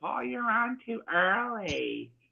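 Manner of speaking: high, very slow, with early stretched long. Retelling what Laura said to Paul, imitating Laura's voice. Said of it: "There goes Laura's voice".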